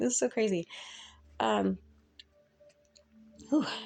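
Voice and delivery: crying while talking. Speaker who cannot stop crying says this, crying while talking. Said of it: "I cannot stop crying".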